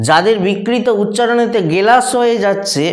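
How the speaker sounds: normal talking voice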